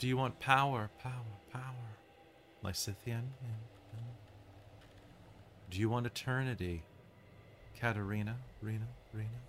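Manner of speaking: soft, ethereal feminine voice. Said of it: "speaking with this very ethereal voice".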